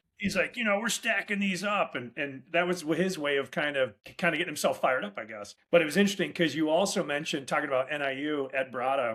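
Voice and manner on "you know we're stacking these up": rough, gritty, raspy, pitched-up voice. Retelling what a man said during cold calls: imitating T J McWilliams's raspy voice. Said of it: "he had a real raspy voice".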